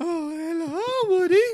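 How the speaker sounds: very high role-play voice. Retelling a contestant's Toy Story role play, playing Bo Peep. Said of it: "he's, like, Miss Bo Peep".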